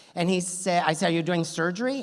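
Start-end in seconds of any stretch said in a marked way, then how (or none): none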